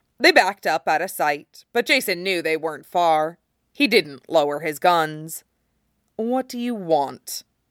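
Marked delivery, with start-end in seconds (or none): 6.2-7.4 demanding and insistent, high pitch. [name] questions Jason, who keeps his guns raised: demanding.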